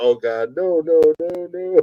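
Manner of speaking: put-on frantic, desperate pleading, pitch rising. Retelling a story, the speaker quotes Blaine: imitating Blaine's panicked pleading. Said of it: "Blaine said".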